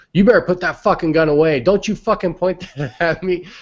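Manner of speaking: high, angry yell. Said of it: "yelling at her".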